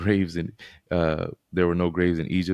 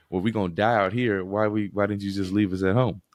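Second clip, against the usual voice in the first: mocking, complaining, sarcastic tone; 3 semitones higher than usual. Retelling the Egyptians turning to their leader, retelling a sarcastic remark. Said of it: "Like sarcastically saying".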